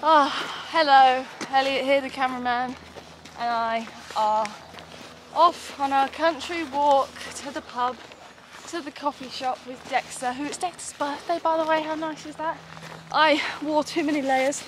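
puffing, winded, high-pitched out-of-breath chatter. Vlogging on a walk to the coffee shop after climbing a hill, out of breath. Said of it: "I'm out of breath, as you can see".

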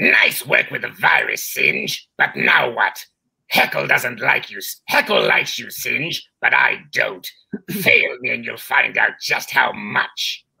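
put-on rough, creaky, rasping voice. Voicing a character's line to Singe, Snide character voice. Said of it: "I have to close my eyes to do this".

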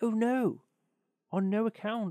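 high, drawn-out crying out. A small man answers the miller's demand, cried out. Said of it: "cried little Hans".

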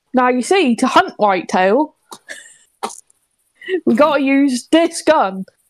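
West Country Somerset accent. Doing an April Fool's hunting video on another creator's channel, in a Somerset accent. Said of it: "do the Somerset accent".

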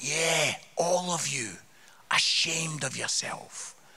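put-on drawn-out Scottish accent. Speaker retells scolding a group of silent lads, in very slow Scottish accent. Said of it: "speak very slowly in Scottish".

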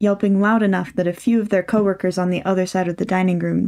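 ordinary delivery

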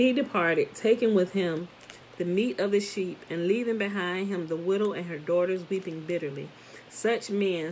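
ordinary delivery, nothing marked

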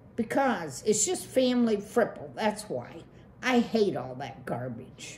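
plain

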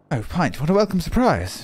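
generic British man's voice. Voicing an unvoiced game character greeting Pint, generic British male voice. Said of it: "I'm a generic British male voice".

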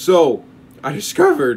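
voice breaking and cracking mid-phrase. Speaker, terrified of dolls that move, starts explaining a discovery with a voice cracking. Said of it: "voice crack".

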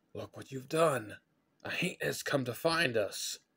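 frightened, high-pitched, spooked whisper. Benjamin, after a cracking sound in the brush behind the boys, whispered. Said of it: "Benjamin whispered".

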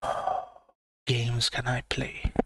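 soft, hushed, low whisper.

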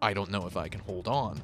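ordinary talk, nothing marked

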